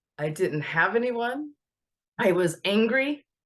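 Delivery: slow speech, heavy with emotion. Speaker sharing her own story of going without, emotional. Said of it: "I don't know why I got so emotional".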